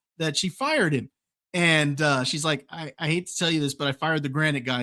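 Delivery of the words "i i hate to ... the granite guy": usual speaking voice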